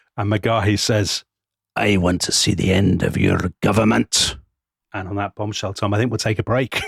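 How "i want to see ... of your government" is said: put-on rough Glasgow accent. Retelling McGahey's answer when asked what he wants, gravel-voiced Glaswegian McGahey. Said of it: "gravel-voiced Glaswegian communist".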